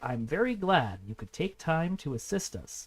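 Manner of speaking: reading at the slowest possible pace. Showing how to read on-screen text so others can follow; reading as slowly as possible. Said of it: "read the text as slow as I possibly can".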